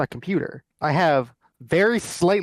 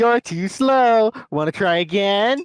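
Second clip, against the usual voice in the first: high, very slow, dragged-out cartoon voice; 5 semitones higher than usual. Telling someone to read the line in the Sonic voice: Sonic voice. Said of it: "start reading it in the Sonic voice. Be like".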